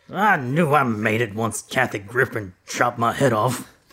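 slow, put-on cranky, grumpy old man voice. Reading a game phrase in an assigned accent: grumpy old man voice. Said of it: "It's the grumpy old man".

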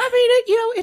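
high-pitched voice. Pressed on why he won't commit to something, voice getting high. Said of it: "why is your voice getting so high?".

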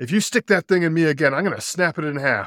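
loud, high-pitched shout. Telling a classroom joke, voicing the girl poked with a pin: retelling a shout. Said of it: "and she shouted".

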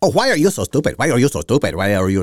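put-on Spanish-sounding accent. Retelling reporters confronting a woman, the speaker slips into a Mexican accent. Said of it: "I have a Mexican accent".

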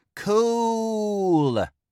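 "cool" very high, loud, and drawn out. Narrator reads a child repeating a word to an adult, louder and drawn out. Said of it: "the child repeated in a louder voice, lengthening out the word".

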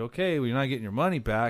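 plain

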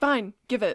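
loud, sulky, bratty put-on child voice. Retelling a character taking the Moonstone: imitating Catherine as a petulant child. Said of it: "Almost like a petulant child".

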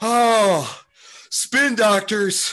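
put-on, very high, loud breathless gasp, "oh" stretched. Retelling a comedy sketch about a jogger from 1992: imitating an out-of-breath jogger. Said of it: "while being out of breath".

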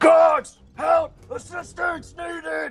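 very high-pitched, slow, drawn-out screams. Voicing a guard in a fight who screams for help: screaming for the guards. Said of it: "he starts screaming".

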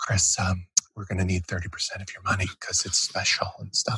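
gentle, breathy, very soft-spoken and hushed. Imitating Matt asking for thirty percent: imitating Matt, very soft-spoken. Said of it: "He'd be very soft-spoken".

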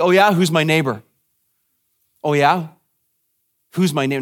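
mock smug, self-satisfied, lawyerly tone, repeated. Acting out what he might have said wanting to debate, mock-smug. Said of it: "you can almost hear him saying smugly".

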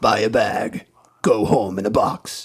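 deep, grave, sepulchral announcer voice. Recalling terrible movie commercials, imitating the announcer's sepulchral voice. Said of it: "this like sepulchral voice guy going".

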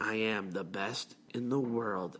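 low, flat monotone. Describing a wrestler's changed persona, quoting his catchphrase in a monotone Jericho impression. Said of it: "Like monotoned".

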